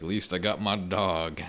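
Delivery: normal talking voice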